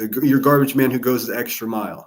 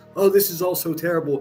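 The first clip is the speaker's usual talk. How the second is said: put-on holier-than-thou preachy tone, pitched up; 7 semitones higher than usual. Retelling someone's criticism of the speaker: sanctimonious voice imitating Nanya. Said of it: "criticizing in the most sanctimonious voice".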